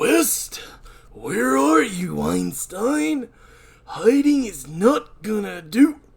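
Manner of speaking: put-on macho character voice. Reading Cabrera calling out for West: Macho Man voice. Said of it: "why did I choose Macho Man voice?".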